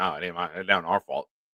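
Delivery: mock whiny voice, soft, low and mumbled.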